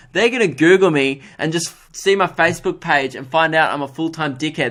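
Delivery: plain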